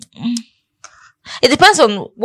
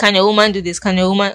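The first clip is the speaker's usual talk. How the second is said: ordinary talk, nothing marked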